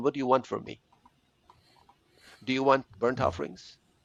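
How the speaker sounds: play-acted delivery heavily laced with sarcasm. Retelling the people's reply to god about sacrifices: acting out a sarcastic reply. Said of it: "with a kind of a sarcastic overtone".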